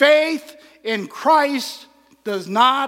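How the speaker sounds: very loud lecturing voice. Retelling what he said to drowsy students in class, in a loud voice. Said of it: "he said in a loud voice".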